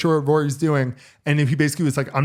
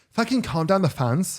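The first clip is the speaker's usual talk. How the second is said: put-on Valley Girl style accent; 4 semitones higher than usual. Joking with a friend, acting out how European golfers shouted at the crowd, speaking in imitating a Valley Girl voice. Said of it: "It's kind of my Valley Girl".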